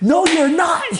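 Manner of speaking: shrill, very high-pitched, furious yelling. Retelling how a friend yelled at him, acting out the angry yell. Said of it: "He's like yelling at me like".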